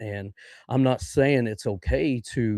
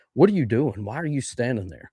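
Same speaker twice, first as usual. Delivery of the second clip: acted yell, louder and higher; 2 semitones higher, 3 dB louder than usual. Recounting trying to get a woman out of a hot, creaking house, retelling a yell.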